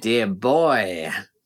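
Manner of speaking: taunting, mocking delivery. Reading a character's reply during a betting game, mockingly. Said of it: "he says, mockingly".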